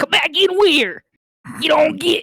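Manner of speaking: bugbear-like monster creature voice. A game narrator voices a bugbear calling to the players, in a bugbear monster voice. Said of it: "I'm gonna do this with the fucking voices".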